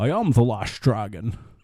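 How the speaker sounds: put-on Scottish accent. Letting the others hear his Sean Connery: Sean Connery impression. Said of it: "Is it better than my Sean Connery?".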